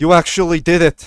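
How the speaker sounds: high, loud, bright, relieved and joyful voice. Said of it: "He comes around them, approaching all of you".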